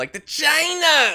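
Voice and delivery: super high-pitched China.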